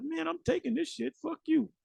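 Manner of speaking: put-on high, rough, furious woman voice outburst. Imitating a desperate mother who flips out: imitating an angry woman flipping out. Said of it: "she gonna flip".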